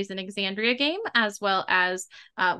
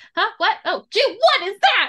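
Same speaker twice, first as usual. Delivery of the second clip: very high, loud, jumpy, startled outburst; 12 semitones higher, 7 dB louder than usual. Describing Haim at a computer hearing someone come up, startled freaking out. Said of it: "he just kind of like freaks out".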